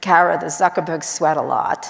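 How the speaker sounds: put-on strong, very New York accent. Quoting the mother of the man being discussed as she greets her, new york accent. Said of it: "she has a very New York accent".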